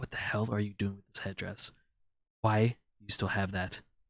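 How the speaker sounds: muttering under breath. As the group sits down in the scene, a character mutters under his breath. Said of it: "Tommy very like under his breath is like".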